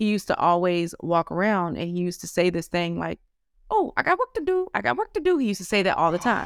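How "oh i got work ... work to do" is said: very high-pitched, woman-like voice. A parent retells the phrase their son kept saying, in a high voice like a woman. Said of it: "he would say in a high voice, like a woman".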